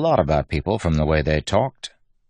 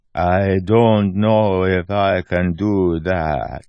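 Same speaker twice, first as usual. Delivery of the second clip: put-on slow, deliberate, slurred, slight terrace accent. In a story, a character answers as guest rooms are prepared, slow, deliberate, slurred. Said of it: "talking in a slow, deliberate way, with a hint of terrace and a lot of slurred words".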